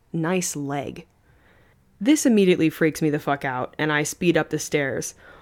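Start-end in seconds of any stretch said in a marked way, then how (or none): 0.1-1.0 sudden shift to a much darker voice. Retelling what a man on the stairs said next: much darker voice. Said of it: "in a much darker voice".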